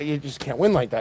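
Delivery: ordinary talk, nothing marked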